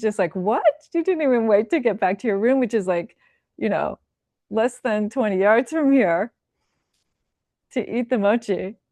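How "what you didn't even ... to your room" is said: astonished, amazed, disbelieving tone. Retelling the attendant's reaction on seeing the sweet already eaten: imitating amazed disbelief. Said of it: "And she was amazed".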